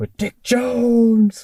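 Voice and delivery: high, very slow, drawn-out calling.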